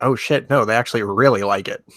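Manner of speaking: quiet, private muttered aside. Turning to fellow players, saying it under his breath. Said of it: "under my breath".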